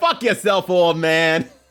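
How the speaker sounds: put-on New York-accented speech. Acting out a line the speaker says is said in a New York accent. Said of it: "it says it in a New York accent".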